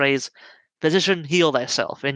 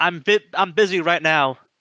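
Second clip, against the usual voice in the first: voice calling back from another room, distant; 3 semitones higher than usual. Voicing someone inside answering a call about an injured officer: calling back from inside. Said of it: "you hear a voice call back".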